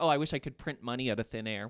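ordinary talk, nothing marked

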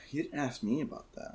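put-on grave, solemn, breathy near-whisper. Retelling what Gabriella says: Gabriella solemn voice. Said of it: "in a solemn, not angry tone".

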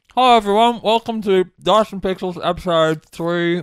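loud, high-pitched speech while chewing a mouthful. A host opens the dice and pixels episode while eating: talking with mouth full. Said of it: "Why are you eating while you're doing this?".

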